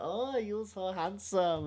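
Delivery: very high, slow, put-on Chinese accent. Retelling what a woman said while sitting on a man's lap, in a put-on Chinese voice. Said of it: "I don't know why I put on a Chinese voice".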